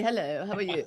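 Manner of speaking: put-on English accent. Guest mimicking how their mother talked after reaching London, imitating a put-on English accent. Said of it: "My mother would go to London, and after half an hour, she'd be".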